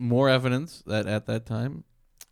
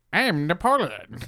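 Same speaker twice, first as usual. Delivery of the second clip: odd, silly, strange voice, pitched higher; 5 semitones higher, 4 dB louder than usual. Picturing a historical figure with a weird voice: weird Napoleon voice. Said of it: "historical figures with weird voices".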